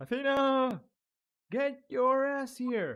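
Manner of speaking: very loud, shrill, high shouted call. A player's character calls out for someone, shouting. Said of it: "I'm shouting".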